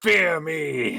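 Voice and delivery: high, menacing, threatening monster war cry. A player's lich character inflicting wounds on a foe: shouting. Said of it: "just shouting".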